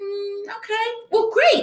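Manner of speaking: high, sing-song, fake cheerful, dismissive.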